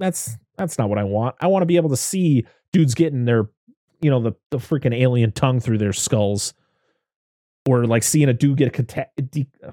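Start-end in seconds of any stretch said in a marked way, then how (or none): none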